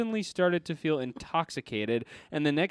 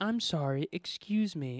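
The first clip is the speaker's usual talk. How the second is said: soft, shy, quiet, slow voice; 5 dB quieter than usual. Reading a story aloud, a woman apologizing in a queue: said quietly with shy smile. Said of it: "said quietly with a shy smile".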